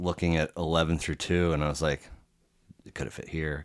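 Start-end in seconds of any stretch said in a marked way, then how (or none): 2.9-3.6 quiet, hushed musing to oneself.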